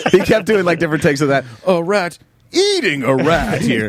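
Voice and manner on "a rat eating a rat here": very slow, sing-song, drawn-out news reporter cadence. Retelling how a tv news guy kept redoing his take, in news-guy voice. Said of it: "in his news guy voice".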